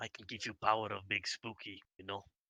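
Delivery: voiced, hushed half-whisper, close up. Half-whispering to the Minotaur in character: half-whispering in character. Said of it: "I walk up to the Minotaur and I whisper".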